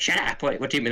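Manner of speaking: mock irritated, fed-up, annoyed exclamation. Describing the Doctor's companion, the speaker acts out her mock-annoyed reply. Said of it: "Like she get annoyed".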